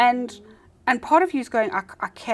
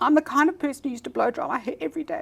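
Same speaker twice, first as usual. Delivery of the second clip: put-on cracking, breaking voice, higher; 6 semitones higher than usual. Retelling what a caller phoned in to say: imitating a cracking voice. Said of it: "her voice was cracking".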